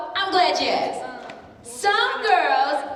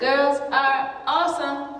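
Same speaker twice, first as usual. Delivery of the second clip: plain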